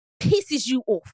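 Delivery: put-on London accent. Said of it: "my London accent low-key good".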